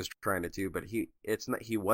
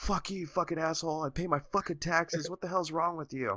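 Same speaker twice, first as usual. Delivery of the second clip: furious, pitched-up yelling in a fast stream; 9 semitones higher than usual. Retelling what a man on the grounds shouted at him, retelling an angry yell. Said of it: "yelling obscenities at me".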